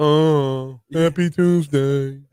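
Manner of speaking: loud, gloomy, morose, dragging voice with long "oh". Morning radio host demonstrates a morose way of greeting the day. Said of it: "like a m- morose".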